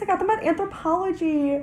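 put-on high, excited, girly gushing voice.

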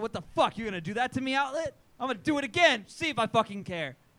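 furious yelling. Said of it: "I just got fucking mad".

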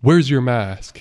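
loud, aggressive, militant yell. Retelling a man at the store door demanding a mask: imitating a militant yell. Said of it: "Like, very militantly".

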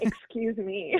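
playful put-on sass, mock offended. Reacting to the other speaker's remark about taking the crooked path: sassy mock offense. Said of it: "It's my sass".

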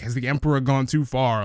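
ordinary talk, nothing marked

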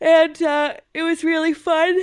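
words pulled long, spoken through a yawn. Sharing the geekiest thing they did this week, yawning while talking. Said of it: "I know I'm yawning as I'm saying".

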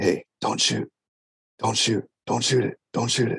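insistent, repeated, under-the-breath whisper. Retelling what the guy guarding him said: imitating someone whispering. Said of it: "he's just whispering to me".

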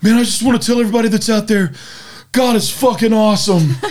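very high bawling, blubbering through tears. Telling a story about a man coming out of the water, imitating a man bawling. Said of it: "he's crying, he's bawling".

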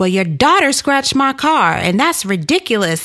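high, heated, angry ranting.

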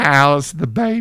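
taking on a woman's voice. Retelling a movie scene, imitating his sister. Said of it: "That's my impression of his sister".

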